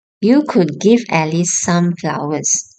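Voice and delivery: plain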